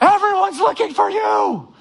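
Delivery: play-acted, very high, frantic, freaked-out shriek. Retelling how the disciples found Jesus, acting out disciples screaming. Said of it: "they're, like, screaming at him".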